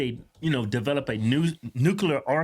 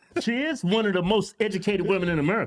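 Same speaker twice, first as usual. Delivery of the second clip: ordinary talk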